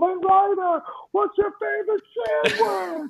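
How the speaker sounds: shrill, high-pitched shouted scream. A dad retells screaming a question at a character in a Disney parade, retelling a scream. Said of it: "I'm screaming at like Flynn Rider".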